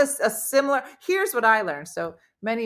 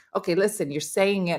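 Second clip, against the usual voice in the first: ordinary delivery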